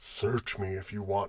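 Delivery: put-on deep seductive voice. Retelling a movie scene where a woman lifts her shirt: imitating a very deep voice. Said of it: "Her voice got, like, so deep".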